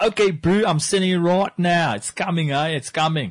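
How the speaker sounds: fake South African accent, high-pitched and loud. Joking about sending an email, in a put-on South African accent. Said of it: "really hope there's no South Africans that are listening".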